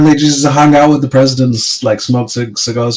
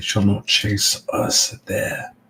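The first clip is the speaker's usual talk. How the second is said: put-on old demonic character voice, lower and quieter; 4 semitones lower, 11 dB quieter than usual. Voicing a character slipping into his old demonic voice to plan. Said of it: "he slips into his old demonic voice and says".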